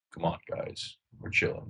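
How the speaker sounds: deep, hushed, totally relaxed, chilled-out whisper. Telling friends how someone's brother talks: imitating a slow, deep voice. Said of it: "He talks so slow and like deep".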